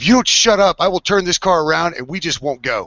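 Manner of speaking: put-on, high-pitched screaming voice. Retelling how mom turned around in the garage: imitating mom screaming. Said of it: "my mom turns around and screams".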